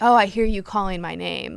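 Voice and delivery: put-on creepy voice. Retelling a scene where Sam answers a character calling his name: imitating Sam being creepy. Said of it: "real creepy about it".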